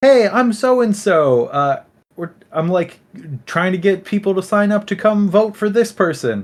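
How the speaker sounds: high, slow, chirpy campaigner voice. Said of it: "she's like".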